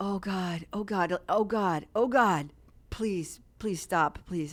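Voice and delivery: desperate, frantic, panicked repeated pleading, fighting off panic. Retelling a moment when the chairs had moved: retelling own panicked pleading. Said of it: "It's like trying not to panic".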